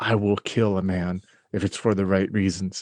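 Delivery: low, hushed stage whisper, half-whispered. Playing a character in a game, half-whispering back into a man's ear. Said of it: "I whisper back in his ear".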